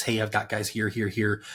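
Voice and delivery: ordinary talk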